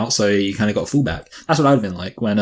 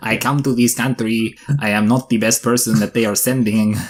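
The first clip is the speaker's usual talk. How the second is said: put-on Spanish accent. Playing out a hypothetical rally impression of a Spanish person, mock Spanish accent. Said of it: "an impression of a Spanish person".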